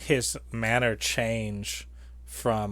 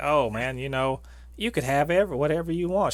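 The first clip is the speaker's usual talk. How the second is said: put-on down-home accent; 3 semitones higher than usual. Speaker retelling what a woman said while trying to convince them, in a down-home accent. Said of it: "with that hometown, down home accent".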